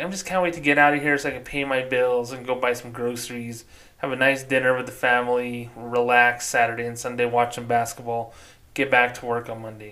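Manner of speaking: ordinary talk, nothing marked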